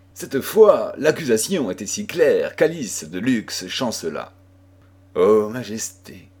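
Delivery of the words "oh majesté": said in a murmur. Narrating a story, Alice de Luxe answers Jeanne d'Albret's accusation, murmured.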